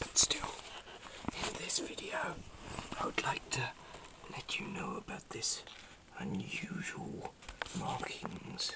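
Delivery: hushed, soft whisper, kept quiet throughout. Recording a video about markings in the sky, the YouTuber speaks to viewers whispering. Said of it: "I'm whispering because it is actually a strange time".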